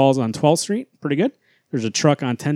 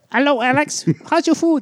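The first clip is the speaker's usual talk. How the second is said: fake, very high-pitched put-on Spanish accent; 12 semitones higher than usual.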